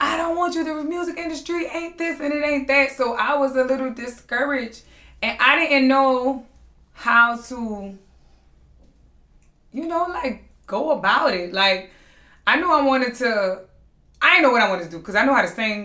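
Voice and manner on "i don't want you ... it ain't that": high-pitched disapproving voice. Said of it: "My mama was like".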